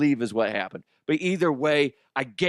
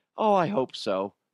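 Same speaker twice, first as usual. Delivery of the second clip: mock small, little timid voice; 2 semitones higher than usual. Retelling a kid's reply during warm-ups: imitating a little timid voice. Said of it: "a little timid voice".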